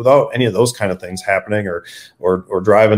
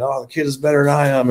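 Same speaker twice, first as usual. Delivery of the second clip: put-on high giggling, laughing through the words; 6 semitones higher than usual. Retelling what a father said while filming a race: imitating someone laughing while talking. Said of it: "he's laughing and giggling and saying".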